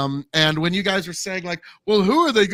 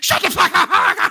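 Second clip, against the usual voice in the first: play-acted very high, very slow, loud, drawn-out yell; 11 semitones higher, 5 dB louder than usual. Mocking another speaker by imitating Jacanadar: imitating Jacanadar yelling. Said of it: "Now you are like Jacanadar".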